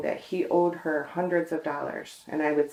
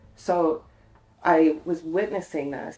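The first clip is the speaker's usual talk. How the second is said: usual speaking voice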